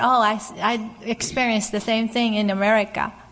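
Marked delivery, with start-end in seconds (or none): none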